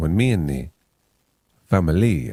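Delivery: put-on Spanish-accented radio announcer voice. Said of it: "And she says".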